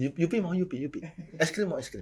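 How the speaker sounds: high-pitched, creepy-uncle coaxing voice.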